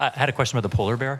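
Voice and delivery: speaking up.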